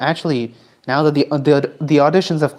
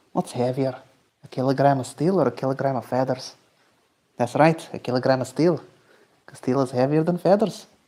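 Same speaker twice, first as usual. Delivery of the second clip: put-on speaking in a Scottish accent; 4 dB quieter than usual. Friends plan to dub the kilogram meme; one performs it in a Scottish accent. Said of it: "You do the accent so well".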